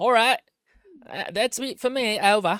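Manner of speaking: put-on British accent. Signing off like old-timey warplane radio, in a put-on british accent. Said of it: "I'll say it in a British accent too, like we're old timey warplanes".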